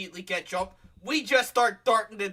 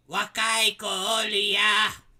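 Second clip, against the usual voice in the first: put-on elderly woman's voice, stretching out a name; 4 dB louder than usual. Retelling what an old lady sitting outside a house said, imitating an old lady's voice. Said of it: "Like that was her exact voice".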